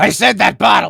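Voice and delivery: tight-throated, strangled, high, creaky, choked-off voice. Speaker doing a character voice while clenching the throat: tight strangled throat voice. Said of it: "doing that voice while clenching my throat tightly".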